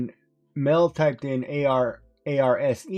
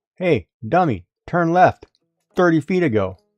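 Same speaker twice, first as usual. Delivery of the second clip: put-on navigation voice; 3 semitones higher, 6 dB louder than usual. Joking about what the GPS says while driving: imitating a rude GPS voice. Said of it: "it'll be like".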